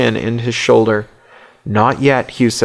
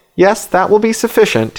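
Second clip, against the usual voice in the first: condescending, patronizing tone, slightly high pitch; 8 semitones higher than usual. Narrator reads the bishop answering the judge, condescending. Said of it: "he says condescendingly".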